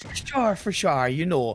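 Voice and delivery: lilting Irish accent. Saying the phrase again when asked once more: Irish accent. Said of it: "go on, please, just once".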